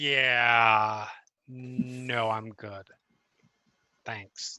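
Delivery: complete deadpan, low and flat, no expression. Answering an invitation to come down, in character: completely deadpan. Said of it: "complete deadpan".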